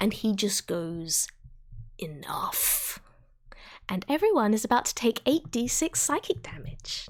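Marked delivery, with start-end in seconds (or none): 2.0-3.0 broken, rasping, hissing whisper. Voicing a villain clutching his bleeding throat: hissing, rasping broken voice. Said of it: "he is hissing and rasping it through his, wait, like, broken voice".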